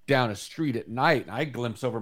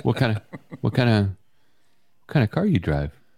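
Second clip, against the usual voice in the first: acted flirty come-on tone; 4 dB louder than usual. Acting out a pickup line on the other speaker: acted pickup line. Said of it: "let me put a good line on you".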